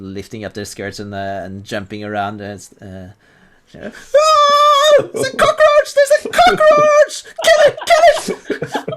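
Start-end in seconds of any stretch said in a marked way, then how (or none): 3.7-8.9 piercing, shrill, very high, very loud drawn-out ah shriek. Voicing lady statues who scream at a cockroach: screaming. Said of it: "they start screaming".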